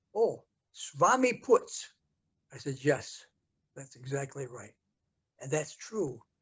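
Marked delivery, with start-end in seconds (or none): 0.2-1.9 put-on Hungarian American accent, raised pitch. Retelling what a woman said when asked where they were going, imitating a hungarian american accent. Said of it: "in her Hungarian American accent".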